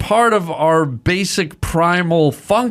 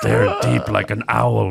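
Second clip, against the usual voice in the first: laid-on, put-on Latin American accent; 8 semitones lower than usual. After being asked to do the voice, speaking in Juan Valdez voice. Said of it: "the Juan Valdez voice".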